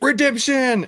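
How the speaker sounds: put-on, very high scream at top of lungs. Retelling kicking at a ball during practice: retelling a scream. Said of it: "I scream at the, the, the top of my lungs".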